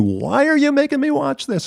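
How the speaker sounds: mock fed-up screaming, very high, shrill and swooping. Retelling what she screamed at him during a taped game, imitating someone screaming. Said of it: "she's screaming at me".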